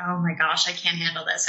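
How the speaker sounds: ordinary delivery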